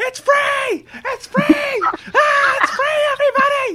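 put-on very high, loud screaming child's voice. Retelling a little kid who came over and ruined the fun: imitating a kid screaming. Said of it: "just starts screaming to the high heavens".

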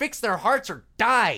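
pure spite, pissed-off delivery. Quoting a favorite TV line, imitating David Lynch saying it spitefully. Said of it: "he just says it with such spite".

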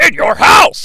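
high, loud, slow sports commentator style yell. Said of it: "Vince is on commentary and yells".

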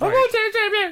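loud creepy scream. Retelling how a character volunteers as tribute: imitating a loud creepy scream. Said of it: "she just screams out, like, really loud and s-, creepy".

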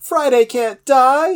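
high, slow, foal-like scream.

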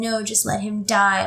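put-on crying, tearful pleading voice. Retelling a scene where a girl refuses to help: imitating someone crying. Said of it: "the girl's crying and saying".

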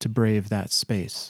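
ordinary delivery, nothing marked

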